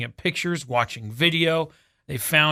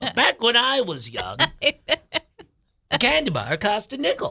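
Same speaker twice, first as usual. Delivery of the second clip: high, sing-song put-on old granny voice; 8 semitones higher than usual. Playing a grandma being walked to bed, in an old grandma voice. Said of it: "what's your grandma voice?".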